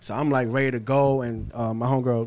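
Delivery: normal talking voice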